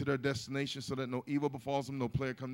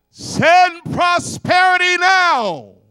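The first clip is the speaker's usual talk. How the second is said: very loud, booming, very high shout, stretched out; 22 dB louder than usual. Leading a call-and-response, the phrase shouted for others to repeat. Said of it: "I'm going to shout it out".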